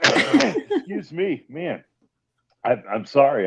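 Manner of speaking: very slow, halting, throat-catching choked-up delivery. Apologizing to the interviewer mid-conversation: something caught in throat. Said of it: "I got a little something in my throat".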